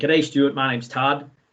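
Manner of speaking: put-on American accent. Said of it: "excuse me for the bad American accent".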